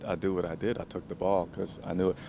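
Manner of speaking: low, quiet, level, calm monotone, soft. Showing how he talks about getting an interception, in a monotone, calm, quiet Stephon Gilmore impression. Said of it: "He talks like this".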